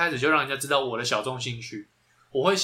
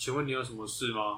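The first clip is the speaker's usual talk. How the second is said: put-on listless, feeble voice, lower and quieter; 3 semitones lower, 9 dB quieter than usual. Mimicking how the other speaker usually talks, imitating a listless, feeble voice. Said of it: "有气无力".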